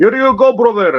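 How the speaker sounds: put-on Arabic-sounding accent. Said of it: "I literally play accent war with people".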